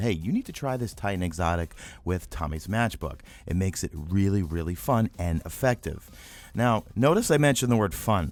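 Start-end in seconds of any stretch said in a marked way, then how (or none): none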